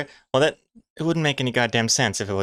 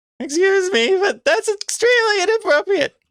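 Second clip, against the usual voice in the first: very high, loud, put-on woman's voice; 6 dB louder than usual. Performing a comic character's line after being asked: lady voice. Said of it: "Let's hear your lady voice".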